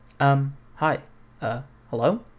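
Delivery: slow, hesitant, nerdy, dorky, awkward voice. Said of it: "'cause that sounds, like, nerdy".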